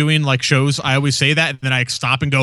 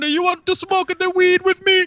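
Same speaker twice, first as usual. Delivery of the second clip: put-on fake Jamaican-style voice, pitched higher. Retelling a movie scene, imitating a fake Rastafarian guy. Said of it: "he's like a fake Rastafarian guy".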